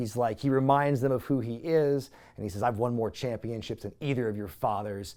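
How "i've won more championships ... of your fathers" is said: quiet, calm, controlled anger held in. Retelling a wrestler answering his taunters: imitating a quiet, calm anger. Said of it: "very calmly, very angrily, but cal-, you know, very quiet".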